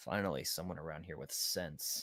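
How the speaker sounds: low murmur, half under the breath. Walking away after being sent off to work, in a low tone under breath. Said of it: "just like in a low tone under my breath just go".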